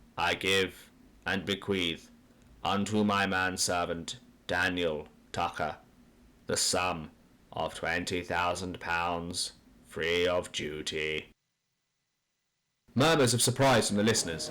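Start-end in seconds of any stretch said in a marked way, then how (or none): 0.2-11.3 low, dry, deferential monotone. A family solicitor reads the will aloud to the assembled listeners, in a dry monotone. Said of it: "He is a desiccated, deferential man with round shoulders, / He is a desiccated, deferential man with round shoulders, winged collar, / He is a desiccated, / in a dry monotone, I, [name], / in a dry mo".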